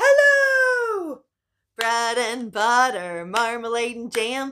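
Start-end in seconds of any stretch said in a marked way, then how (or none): 0.0-1.2 very loud, shrill, high, stretched-out hello. Leading a group rhyme, saying hello as loud as you can, loud hello. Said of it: "Let's say hello as loud as we can".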